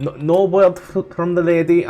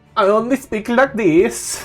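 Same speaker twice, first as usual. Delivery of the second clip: very slow, high, botched put-on French accent; 5 semitones higher than usual. Answering a warning not to speak in an accent: Borat voice from a failed French accent. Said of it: "I tried for French and ended up with fucking Borat".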